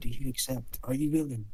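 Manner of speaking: soft hushed half-whisper, barely audible. The narrator voices a question heard in the back of a player's mind, half-whispering. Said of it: "You hear it in a whisper".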